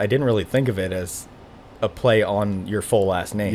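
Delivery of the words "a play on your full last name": ordinary talk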